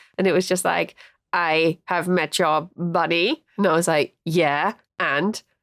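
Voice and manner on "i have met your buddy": slow, comical little alien voice. Retelling meeting an alien, the speaker quotes it in a funny little alien voice. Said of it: "this funny little voice".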